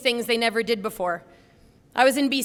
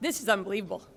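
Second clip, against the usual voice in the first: words coming through tears, crying while talking; 2 semitones lower, 6 dB quieter than usual. Reading out a written speech, crying while talking. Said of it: "I'm crying already".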